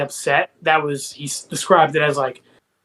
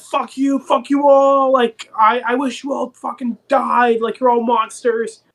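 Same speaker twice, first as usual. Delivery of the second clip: acted furious screaming, slow and high-pitched; 8 semitones higher than usual. Retelling a scene where Ben screams at the others: imitating Ben screaming. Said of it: "he starts screaming at them".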